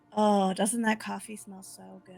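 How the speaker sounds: hushed whisper. Acting out a character coaxing customers in a bakery: whispering.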